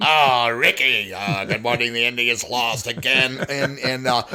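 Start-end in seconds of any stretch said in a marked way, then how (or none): 0.0-3.4 put-on ghostly comedienne voice. Retelling doing the morning sports on air: ghost of Lucille Ball voice. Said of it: "the ghost of Lucille Ball".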